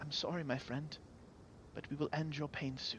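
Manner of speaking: very soft, hushed, sorrowful whisper. A storyteller voices Oradora speaking to the bear, whispering. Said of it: "She whispers".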